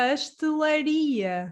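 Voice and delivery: pastelaria with the ri syllable stressed. Correcting someone's pronunciation: stress on ri in pastelaria. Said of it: "you're putting the stress on the I, on this ri".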